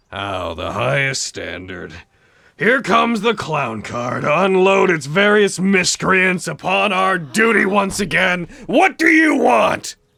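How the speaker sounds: loud, contemptuous, scornful character voice. Voicing a lord who berates arriving adventurers: berating, scornful character voice. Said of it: "berating the others, shaking a tankard".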